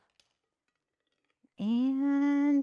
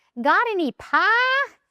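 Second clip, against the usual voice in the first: put-on high, slow, cute little-kid West Virginia accent. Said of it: "with his cute little West Virginia accent".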